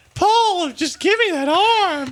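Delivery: very high, flirty cartoon character voice. Joking around in conversation, addressing Paul: Shrek Gingerbread Man voice. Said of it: "you sound like the gingerbread man".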